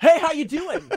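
very high, loud, forced-friendly over-bright voice. Imitating how Kyle greets people who stare: imitating Kyle's big smiling greeting. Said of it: "he smiles as big as he can".

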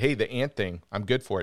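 plain

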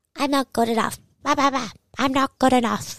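high, goofy cartoon-duck way of talking. Demonstrating how to make an intrusive thought sound silly, in a Donald Duck voice. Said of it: "how to really like do the Donald Duck voice".

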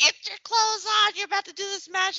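mock shrill scream, very high pitched. Retelling how he screamed at someone to get ready: imitating someone screaming. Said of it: "screaming at Liz".

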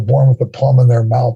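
ordinary delivery

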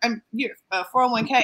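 ordinary delivery

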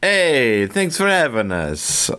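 Italian accent with a swooping, sing-song tune. Podcast guest greeting the host after being introduced, in a Mario accent. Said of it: "I don't know why I'm doing a Mario accent".

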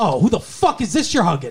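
acted angry, pissed-off outburst. Retelling a scene where she sees him hugging someone, acting out her angry outburst. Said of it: "She gets all pissed off".

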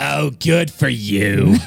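hoarse, raspy voice. Speaker with a cold making a toast, deep raspy voice. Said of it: "It was like so raspy".

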